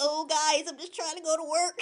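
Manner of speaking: put-on made-up cockroach insect character voice. Retelling a story, the speaker gives the escaping roach a put-on roach voice. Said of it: "I'm glad you gave him a voice".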